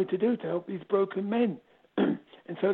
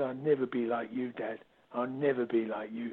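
low, quiet voice full of disgust; 8 semitones lower, 6 dB quieter than usual. A father acts out what his son used to say to him, mimicking a disgusted tone. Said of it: "he screwed up his face and said".

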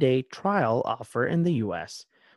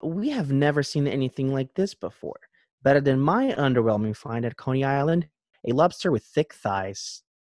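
ordinary talk, nothing marked

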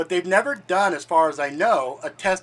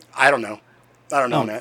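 dismissive, indifferent, couldn't-care-less tone; 5 semitones lower than usual. Answering whether a moon fact is true: indifferent, dismissive tone. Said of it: "That sounded more like, "I don't give a shit,"".

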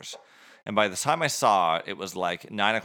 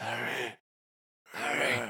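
put-on like an old wizard; 3 semitones higher, 6 dB quieter than usual. Describing the film character to the other speaker, then doing a Dumbledore impression.

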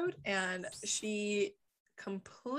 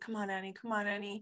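put-on muttering under breath. Retelling a character pushing for a patient: imitating Alex muttering under his breath. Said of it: "under his breath".

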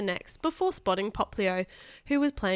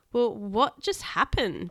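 faltering, stammering, stuttering speech. Reading Brock's line after Team Rocket is carried off: stammering. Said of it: "Brock stammered".

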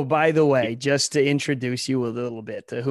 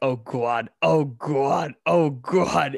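faked orgasm sounds of a Boston woman. Retelling how Ted imitated a Boston woman in a scene: faking a Boston woman's orgasm. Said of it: "imitating a Boston woman having an orgasm".

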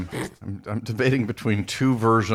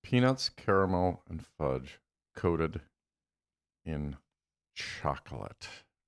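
very slow, soft, halting, drawn out in pieces; 3 semitones lower, 7 dB quieter than usual. Speaker repeats the list of ingredients to the others, very slow. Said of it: "I speak slowly to reiterate".

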